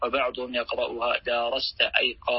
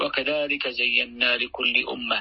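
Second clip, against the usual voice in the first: usual speaking voice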